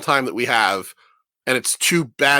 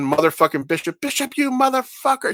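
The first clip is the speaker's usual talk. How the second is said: mock shrill, high scream, rising as it goes; 11 semitones higher than usual. Retelling a movie scene where the heroine finds Bishop gone: imitating someone screaming. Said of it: "she's screaming".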